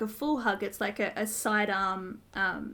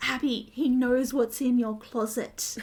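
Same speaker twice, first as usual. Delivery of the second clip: loud, carrying stage whisper; 3 semitones higher, 5 dB louder than usual. Retelling a scene where Carla warns Abby: loud whisper. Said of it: "loud whisper goes".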